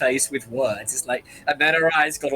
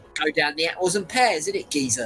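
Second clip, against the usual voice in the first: put-on London Cockney accent, street talk; 2 semitones higher than usual. Asked what kind of accent that is, answering in a cockney accent. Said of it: "It's right Cockney".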